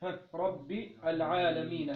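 plain

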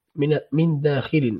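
ordinary delivery

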